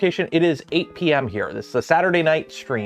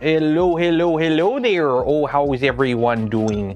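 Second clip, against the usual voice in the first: exaggerated fake Canadian accent. Greeting viewers for a joke: overly fake canadian accent. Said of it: "I don't know why I'm doing this accent".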